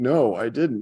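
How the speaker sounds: high voice, on the verge of tears. Retelling a childhood friend's answer to a mom: imitating someone almost crying. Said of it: "he's almost crying".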